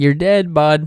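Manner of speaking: Canadian accent slipping in. Fighting an enemy in a game, Canadian accent slipping in. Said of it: "that Canadian accent coming in".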